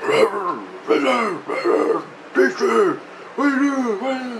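high, far-off calling voice. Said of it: "I can hear him going".

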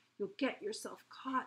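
ordinary delivery, nothing marked

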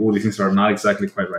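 plain

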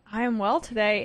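rising intonation. Co-host answering the host's greeting at the start of a show, with rising, slightly higher intonation. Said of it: "said that with a rising intonation to your voice that was slightly higher than normal".

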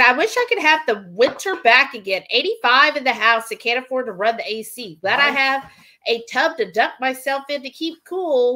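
ordinary talk

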